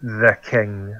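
speaking through gritted teeth. Playing a character who answers about the king: speaking through gritted teeth. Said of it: "gritting my teeth".

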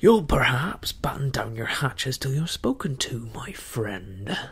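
loud, belligerent, truculent cry. Rebuking a buccaneer who spoke up out of turn, truculent. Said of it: "cried Silver truculently to the speaker".

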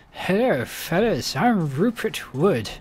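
very loud, booming, rather posh voice. Voicing a character introducing himself, posh Rupert Wood voice. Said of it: "Rupert would have a rather posh voice".

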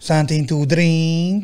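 put-on Transylvanian-accented speech. Retelling what a server asked at breakfast: imitating a Transylvanian accent. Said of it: "They sounded like she had a Transylvanian accent".

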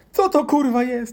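put-on very high, loud, horrified child outburst.

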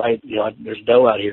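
put-on whispering voice. Retelling telling a companion in the stand about a doe: retelling a whisper. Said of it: "I whispered to him".

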